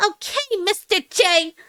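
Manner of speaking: attempted Brooklyn accent. Admitting you can't really do a Brooklyn accent, give it a go: attempted Brooklyn accent. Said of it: "Closest I can get is".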